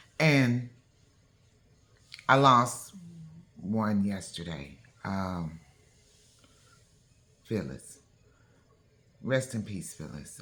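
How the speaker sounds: tearful but composed. Speaking of a lost family member while trying not to cry, holding back tears. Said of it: "I'm going to say this without tearing up".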